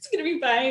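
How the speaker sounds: mock tearful reassuring tone. Retelling comforting a son while crying: imitating own crying. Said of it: "as I'm crying".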